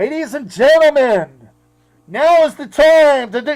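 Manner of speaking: very loud, booming, drawn-out stadium announcer voice. Mocking how regular DJs make simple announcements, in a stadium announcer voice. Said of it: "they sound like the uh, announcer at Anaheim Stadium".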